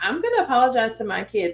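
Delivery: normal talking voice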